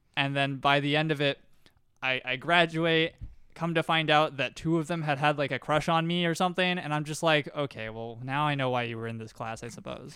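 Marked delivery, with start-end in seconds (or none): 7.5-10.1 put-on scornful, disdainful tone, lower. Retelling a reaction to a discovery, with disdain. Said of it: "I kind of say it with some disdain".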